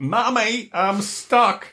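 bad, weak, high put-on Northwest English accent, toddler voice. Act out a child stuck in a toilet seat calling to her mother, in a bad Northwest accent. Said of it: "that's not a very good Northwest accent".

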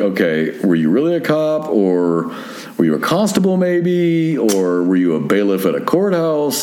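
usual speaking voice

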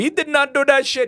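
loud, high-pitched put-on Italian accent. Retrying an impression of how an Italian would react: Italian accent impression. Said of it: "That's good".

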